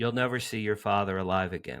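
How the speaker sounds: play-acted loud voice. Retelling a voice heard in a parking lot, imitating a loud voice. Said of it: "That loud".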